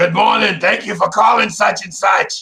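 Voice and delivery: high, crackly voice. Retelling how Martha answered the phone: imitating Martha's crackly voice. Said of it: "if you think my crackly voice is funny sometimes, Martha would be like".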